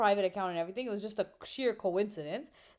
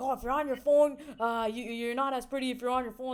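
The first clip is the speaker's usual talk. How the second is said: mock, shouted, heckling voice; 3 semitones higher, 4 dB louder than usual. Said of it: "he was shouting".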